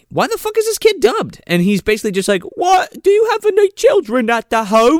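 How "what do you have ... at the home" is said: put-on very high terrible British accent. Mocking a dubbed kid's line: bad British accent. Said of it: "the worst British accents I've ever heard".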